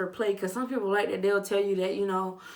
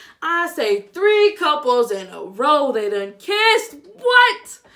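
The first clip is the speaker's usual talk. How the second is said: booming, very loud, swooping holler; 6 semitones higher, 11 dB louder than usual. Speaker talking to the people she calls y'all, yelling. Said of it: "I know I'm yelling".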